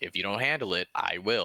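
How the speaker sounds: plain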